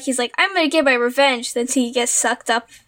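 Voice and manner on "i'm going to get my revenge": mock hot-tempered, worked-up, angry supervillain voice. Retelling a scene where Juggernaut keeps coming out of portals; mock-angry Juggernaut voice. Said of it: "all angry-like".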